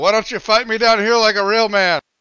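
loud, high shout in a character voice. Floating in the water and calling out a challenge: in-character yell. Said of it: "float for a second and yell".

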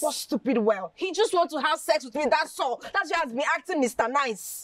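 furious, high, angry voice. Arguing with a friend who keeps saying calm down: angry. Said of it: "Calm down".

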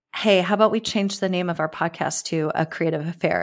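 usual speaking voice

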